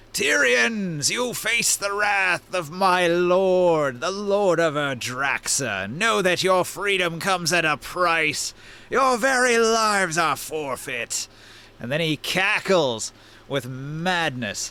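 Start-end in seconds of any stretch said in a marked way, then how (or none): 0.1-11.2 high, menacing, proclaiming herald-style villain voice. Narrating a game, the speaker voices a villain addressing the tyrians: booming villain voice. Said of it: "his booming voice carries out".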